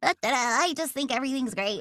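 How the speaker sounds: small, derpy, plucky cartoon voice. Describing the character Callie, doing her small derpy voice. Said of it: "small ... derpy ... plucky and precocious".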